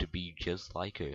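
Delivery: ordinary delivery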